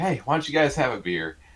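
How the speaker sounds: excited proud dad voice. Retelling a buddy's dad offering them a beer: imitating an excited proud dad. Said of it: "his dad being all excited and proud of us".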